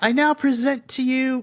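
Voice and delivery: high, full-voice, full-lunged bellowed shout. Game master voicing the prince announcing the party to the throne room: shouting at top of lungs. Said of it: "at the top of his lungs, kind of shouts out".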